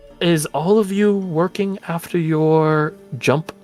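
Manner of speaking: audible whisper. Voicing a character who has beckoned someone closer: stage whisper. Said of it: "so it's like a stage whisper".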